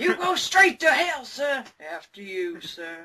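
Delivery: put-on Southern accent. Joking with a co-host in a put-on Southern accent. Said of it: "I've gone all southern".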